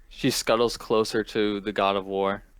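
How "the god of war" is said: ordinary talk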